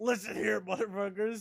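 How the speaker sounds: loud, high-pitched voice, belted out. Attempting an impression after being told it sounds just like him: Filthy Frank impression. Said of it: "That's a perfect impression".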